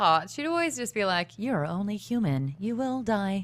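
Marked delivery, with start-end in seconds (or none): 1.4-3.4 slow, sing-songy, drawn-out, smug robot voice. Imitating a mean, snide line she would always say: GLaDOS voice. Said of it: "a sing-songy kind of robot".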